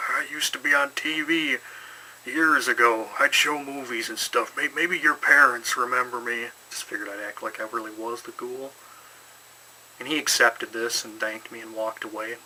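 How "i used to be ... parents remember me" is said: put-on elderly old man voice. Retelling answering a kid on Halloween, acting like the ghoul; old man voice. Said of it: "I put on kind of an old man voice".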